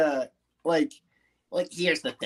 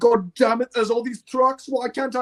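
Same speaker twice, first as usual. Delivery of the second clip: put-on complaining engine voice, pitched higher; 6 semitones higher than usual. Showing how James could still complain about trucks: complaining as James. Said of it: "he can still be complaining about trucks and saying".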